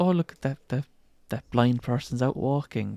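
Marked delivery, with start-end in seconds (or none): none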